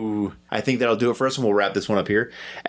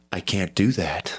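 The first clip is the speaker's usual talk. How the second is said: calm computer voice, much lower pitch; 4 semitones lower than usual. Imagining the ship's computer refusing as everyone faces death: soothing HAL voice. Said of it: "in his ever so soothing voice".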